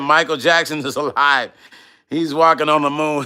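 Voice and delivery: plain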